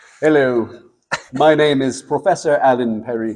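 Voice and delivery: terrible lecturer-style British accent. Going through their pictures, in a horrid Professor Alan Perry British accent. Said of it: "my really absolutely horrid profess- uh, uh, professorial British accent".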